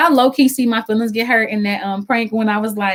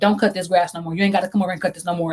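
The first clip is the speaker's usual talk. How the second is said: put-on not-nice tone, quieter; 4 semitones lower, 4 dB quieter than usual. Telling your partner how they sounded when they first told you, imitating someone not saying it nicely. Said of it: "you didn't sound like you said it nice".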